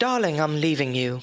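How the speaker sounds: put-on British, English-accented delivery. Demonstrating an accent on a sample line, british accent. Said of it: "everything sounds better with a British accent".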